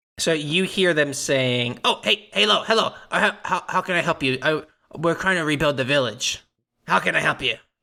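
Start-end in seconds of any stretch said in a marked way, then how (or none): 1.9-7.6 put-on goblin voice, faster pace. Game master voicing villagers greeting the players, in a goblin voice. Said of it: "they talk in Goblin".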